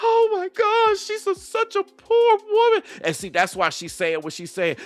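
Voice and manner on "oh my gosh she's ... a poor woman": very high, emotional, gushing, sympathetic. Mocking how viewers react to a woman's videos: imitating emotional women. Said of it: "y'all be getting".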